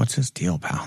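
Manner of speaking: hushed whispered line. Retelling a game scene, the speaker voices a character stopping Dorian, whispering. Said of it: "He whispers".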